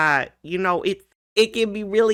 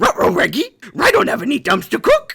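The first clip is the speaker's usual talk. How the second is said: raised, loud cartoon dog voice; 8 semitones higher, 3 dB louder than usual. Trying a cartoon duo bit with a friend, answering as the dog: Scooby-Doo voice. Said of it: "Shaggy and Scooby".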